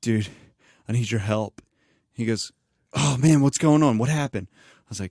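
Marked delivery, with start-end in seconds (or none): 0.0-1.6 fake trembly crying voice, put-on tearful tremble. Retelling calling a man on the phone, in a fake trembly crying voice. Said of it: "I started like with a real trembly, like crying voice".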